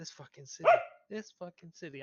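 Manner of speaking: mumbled, muttered under the breath. Walking out of a shop in character, mumbling to himself. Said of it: "I mumble to myself as I walk out".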